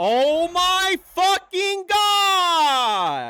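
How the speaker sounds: very loud, very high yell, last word drawn out. Calling a baseball game as a play happens: yelling. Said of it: "Sorry for yelling".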